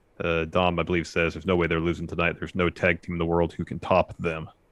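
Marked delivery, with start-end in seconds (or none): none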